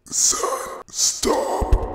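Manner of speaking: loud, rasping, hoarse croaking voice. A father being choked calls out to his son, croaking. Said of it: "He croaked out".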